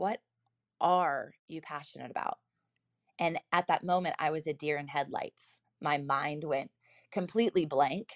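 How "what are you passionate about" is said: leaning hard on the word are. Repeating a question whose inflection point is are, stress on are. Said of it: "the question and the inflection point is are".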